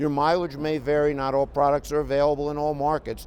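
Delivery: plain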